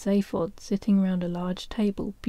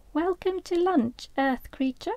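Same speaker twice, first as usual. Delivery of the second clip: very high, small, tiny squeaky voice; 10 semitones higher than usual. Reading a story aloud as a small voice welcomes Arthur to lunch, small voice. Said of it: "A small voice said".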